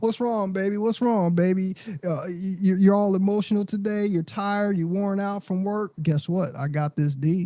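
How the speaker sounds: mock soothing, sweet-talking, consoling tone. Acting out a brother talking to his upset partner: imitating a brother soothing his partner. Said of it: "We walk around and we're like".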